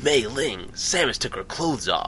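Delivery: raspy character voice. Speaker trying to do a specific character line, raspy character impression. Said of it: "You have to have that really specific raspy voice".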